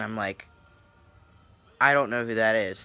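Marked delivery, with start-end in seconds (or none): none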